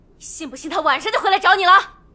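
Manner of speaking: furious, angry voice, very high. Voicing a character speaking to the killer: angry. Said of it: "她看着钟成简怒道".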